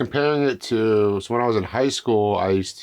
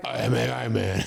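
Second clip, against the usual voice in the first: put-on gruff superhero voice, quieter; 5 dB quieter than usual. Trying a line as a robot character in a Batman voice. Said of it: "should I do a Batman voice for that one?".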